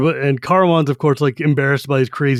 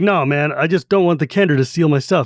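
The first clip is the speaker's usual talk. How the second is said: put-on defensive voice. Retelling a story, acting out Flint's reply: imitating Flint being defensive. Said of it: "super defensive".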